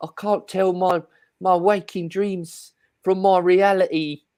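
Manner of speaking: put-on weird British accent, high, slow and drawn out.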